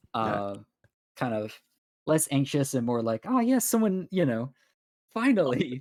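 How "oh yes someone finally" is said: a little cheery, much higher. Finally spoken to, he follows the party, getting a little bit cheery. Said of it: "he does kind of get a little bit cheery".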